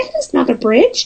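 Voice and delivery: furry puppet monster voice. Imitating a voice heard at Wellington, Grover voice. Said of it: "it sounds like Grover".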